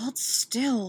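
muttered under the breath, half to self. Picking a lock as pursuers close in, she tells the man beside her, muttering. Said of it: "she mutters".

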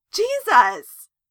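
sudden, very high, very loud, shrill outburst. [name] pushes himself up, interrupting Justin; exclaiming. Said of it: "[name] exclaimed".

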